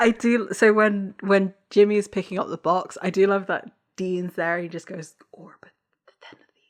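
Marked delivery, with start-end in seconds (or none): 5.3-6.5 imitated half-whisper, quieter. Retelling a character's line from the episode, imitating Dean whispering. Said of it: "mouths it slash whispers it".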